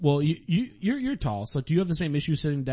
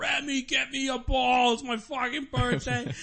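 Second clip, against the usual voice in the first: put-on very high, dragged-out drunken howl; 10 semitones higher, 3 dB quieter than usual. Retelling what a drunk man yelled on his birthday, imitating someone screaming.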